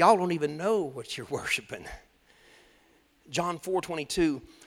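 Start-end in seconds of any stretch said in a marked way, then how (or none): 0.0-1.8 put-on southern accent, much lower pitch. Talking about worship, the speaker quotes Jesus in a southern accent. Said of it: "if i can Say it with his southern accent".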